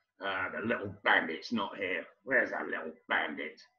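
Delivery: irritable low grumbling mutter under the breath. Retelling how the manager looked for a player: imitating someone muttering under his breath. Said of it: "started muttering under his breath".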